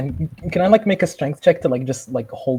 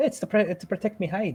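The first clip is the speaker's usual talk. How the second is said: put-on Scottish accent, pitched up; 6 semitones higher, 7 dB quieter than usual. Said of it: "starting to sound more Scottish every".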